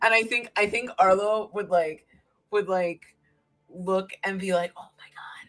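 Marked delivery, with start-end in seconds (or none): 4.8-5.5 whispered, hushed, with bottled-up excitement. Acting out a character's awed reaction during a game scene: whispering in character. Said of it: "and just, like, whisper it".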